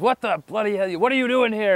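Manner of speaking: high-pitched screaming, acted, not real. Retelling the master morph turning around on the group: imitating someone screaming. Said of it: "he starts screaming at us".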